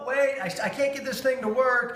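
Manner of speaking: high, fumbling, flustered dad voice.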